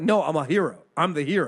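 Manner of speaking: normal talking voice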